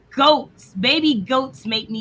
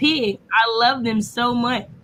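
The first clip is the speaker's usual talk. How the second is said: normal talking voice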